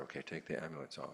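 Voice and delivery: normal talking voice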